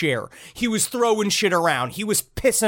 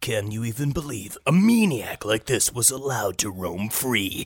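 very low, documentary-style true crime narrator voice; 8 semitones lower than usual. Retelling how a true crime documentary talks: true crime narrator voice. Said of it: "a lot of true crime voice".

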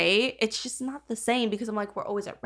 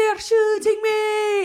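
bad, annoying fake Irish accent, very high-pitched; 11 semitones higher, 6 dB louder than usual. Quoting him while playing Fortnite: bad put-on Irish accent. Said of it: "his impersonation of an Irish accent".

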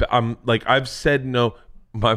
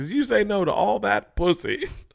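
put-on very high-pitched voice with Italian accent; 7 semitones higher than usual. Retelling what Ron told him, imitating Ron. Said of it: "people love your impressions".

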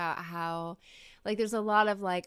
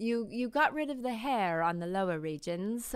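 slight touch of British accent; 3 semitones higher than usual. Speaker slips into a bit of British while talking: slight British accent. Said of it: "is that your Australian accent?".

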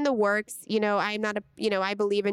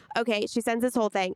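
usual speaking voice

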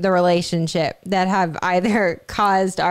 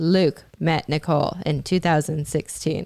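creepy flat monotone narrator voice, much lower; 3 semitones lower, 3 dB quieter than usual. Describing a docu-series to friends, imitating its narrator: creepy monotone narration. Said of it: "creepishly like monotone".

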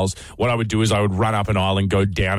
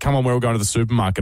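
normal talking voice

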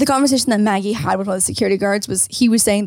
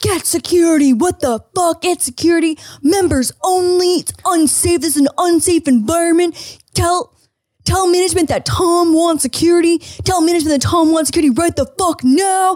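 high, put-on screaming rant; 8 semitones higher than usual. Retelling how a man screamed from the pool: imitating someone screaming. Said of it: "Tom starts screaming from the pool".

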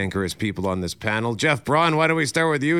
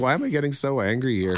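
ordinary talk

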